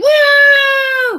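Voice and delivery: high, loud whooping cheer.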